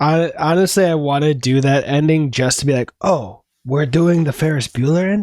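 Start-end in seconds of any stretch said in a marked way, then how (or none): 3.0-5.2 put-on Spanish accent, playful. Joking about copying the Ferris Bueller ending, in a Spanish accent. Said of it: "why am I doing a Spanish accent?".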